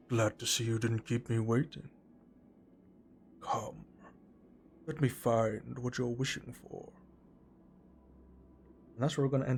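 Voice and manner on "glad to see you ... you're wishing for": huge storybook dragon voice. Voicing a gargantuan glistening green dragon at session's end: dragon voice. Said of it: "I couldn't do the right voice for the fucking dragon".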